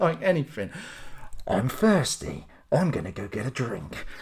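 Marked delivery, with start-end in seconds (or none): 1.5-4.0 hushed movie-trailer voiceover announcer delivery. Mimicking a man who narrates what he does the whole time, movie-trailer voiceover voice. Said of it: "Just doing a voiceover the whole time".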